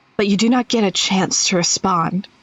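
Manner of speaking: eerie put-on spooky voice, low. Speaking as a departing figure in a scene, using a spooky voice. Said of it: "Let me do my let me do my spooky, spooky voice".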